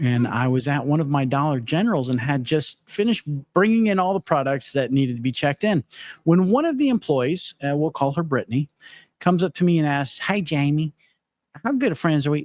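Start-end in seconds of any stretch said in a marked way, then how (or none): 10.2-12.4 heavy, laid-on put-on Kentucky accent. Retelling an employee coming up to him at the store, imitating Brittany's Kentucky accent. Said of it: "That's my Kentucky accent".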